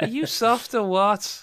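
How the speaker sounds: put-on Irish accent pitched very high. Repeating another speaker's earlier line, the speaker says it in an irish accent. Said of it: "best Irish sounding thing you've ever done".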